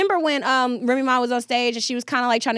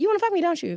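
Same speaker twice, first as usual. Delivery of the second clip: seductive, pitched-up tone; 7 semitones higher than usual. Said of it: "I just look around".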